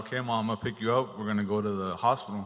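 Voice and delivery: normal talking voice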